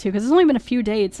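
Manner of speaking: plain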